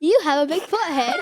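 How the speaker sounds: terrible, bad put-on British accent. Asked to do their British accent real quick, saying a line in a put-on British accent. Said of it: "do your British accent real quick".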